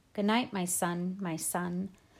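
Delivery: ordinary delivery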